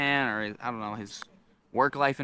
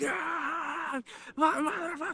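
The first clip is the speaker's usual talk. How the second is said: shrieking, very high, drawn-out scream; 4 dB quieter than usual. Retelling a man waving a metal sign overhead: imitating a man screaming. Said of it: "and he's still screaming".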